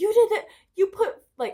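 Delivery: put-on yelling. Recounting an argument with a woman who yelled at the speaker, imitating someone yelling. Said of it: "she's like yelling at me".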